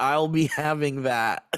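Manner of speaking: usual speaking voice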